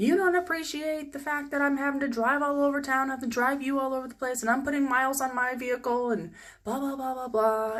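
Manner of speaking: sudden, high, very angry complaining rant. Retelling how he suddenly got mad about driving: imitating someone getting angry. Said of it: "he instantly just got mad".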